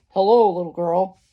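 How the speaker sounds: low, growling big-bad-wolf voice. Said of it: "said a deep, growly voice".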